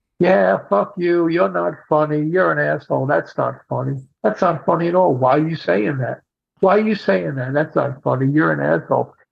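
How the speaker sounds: put-on whispered voice. Retelling a heckler in the front row: imitating a heckler whispering. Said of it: "So now he's whispering".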